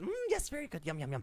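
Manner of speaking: little rodent creature voice. Voicing the Rat King lapping water off the floor: Rat King voice. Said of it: "he looks up at you and says".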